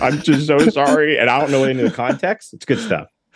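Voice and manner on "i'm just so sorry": play-acted, slow, weepy, tearful, contrite voice. Imitating a YouTuber on a bed apologizing: imitating a crying apology. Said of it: "crying a little bit".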